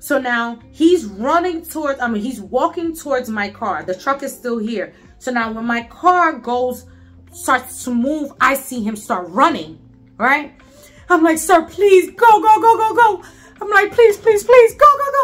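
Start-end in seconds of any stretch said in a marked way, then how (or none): 11.4-15.2 put-on frantic, panicked pleading, much higher, louder. Retelling urging someone to go as a man ran toward the car: retelling panicked pleading. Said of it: "he hears like the panic in my voice".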